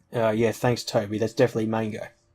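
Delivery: ordinary delivery, nothing marked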